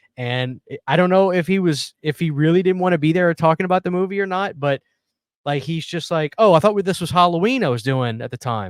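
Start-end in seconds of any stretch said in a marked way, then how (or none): 6.4-8.7 put-on sarcastic voice. Retelling a documentary interview: imitating sarcastic Corey Feldman. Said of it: "he's being sarcastic the entire time".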